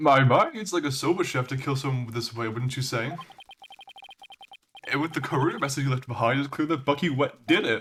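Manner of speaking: put-on dumb-sounding, goofy, really silly voice. A performer voices one of two Rakugo archetype characters in a really stupid voice. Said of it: "the reason why I'm doing the really stupid voice for for that one is because it's like".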